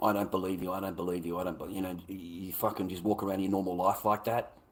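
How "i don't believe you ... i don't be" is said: ordinary talk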